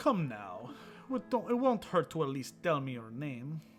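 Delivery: put-on French-accented voice. Pressing someone who won't give their name: french accent. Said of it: "Can you do a French accent?".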